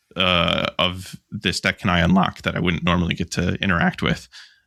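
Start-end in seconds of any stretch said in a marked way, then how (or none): none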